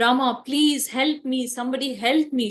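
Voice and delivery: mock frightened, screaming, pleading cry. Retelling Mother Sita being carried off, crying out to Rama: acting out a screaming plea for help. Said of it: "Mother Sita screaming".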